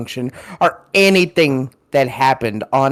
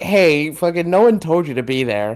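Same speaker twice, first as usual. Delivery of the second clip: mock annoyed, irritated tone; 4 semitones higher than usual. Retelling what you said to her after sneezing on her, retelling own annoyed retort. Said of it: "I'm like".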